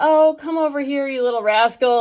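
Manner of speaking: performed, sugary niceness. Retelling how a mom starts talking to her child, imitating performative fake niceness. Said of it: "but it's performative".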